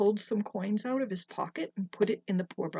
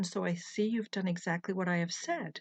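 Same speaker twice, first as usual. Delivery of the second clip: usual speaking voice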